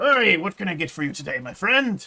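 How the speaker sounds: very loud, booming, high, jovial stock bartender voice. Narrating a scene, a bartender greets the listener's character, generic bartender voice. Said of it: "It's my generic bartender voice".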